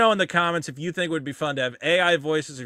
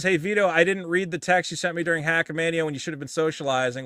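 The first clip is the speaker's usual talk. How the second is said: ordinary delivery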